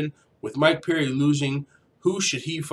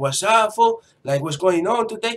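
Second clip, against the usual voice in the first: put-on Mexican accent, pitched up; 6 semitones higher than usual. Showing off an accent picked up from Xbox Live chats, put-on Mexican accent. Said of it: "my Mexican accent".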